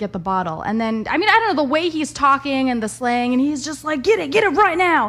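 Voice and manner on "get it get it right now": loud, high-pitched yelling. Speaker retells a stranger yelling at others, retelling a man yelling. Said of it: "he's like yelling at them".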